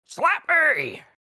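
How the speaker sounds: rising volume and pitch. Grabbing two people in a game scene, a character repeats his demand, getting louder. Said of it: "I'm getting louder".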